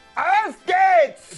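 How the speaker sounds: yelling angrily. Practicing the german phrase auf geht's, say it again with an angry shout. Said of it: "Germans are not always angry".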